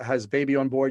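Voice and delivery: normal talking voice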